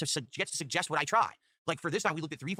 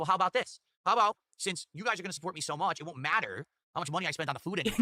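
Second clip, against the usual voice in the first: usual speaking voice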